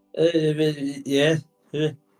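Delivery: put-on drunk voice, yeah drawn out. Answering a hooded man who asks if you are Edith, in a drunk voice. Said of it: "That's sort of a drunk voice".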